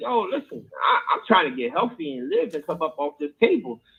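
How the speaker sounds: put-on tearful, crying voice, pleading through tears. Retelling pleading about insurance before surgery, imitating own crying plea. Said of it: "I sat there and was crying".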